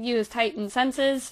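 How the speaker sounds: plain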